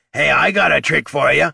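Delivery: gruff rasping growl. Narrating a kobold poking his head out of a purse at Jenner: growled. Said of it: "he growled".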